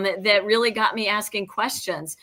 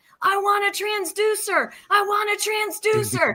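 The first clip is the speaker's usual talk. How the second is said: put-on, shrill, very high-pitched, drawn-out shout; 12 semitones higher than usual. Retelling running back up the stands after a raffle prize: imitating own past yelling. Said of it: "I'm yelling at Stan".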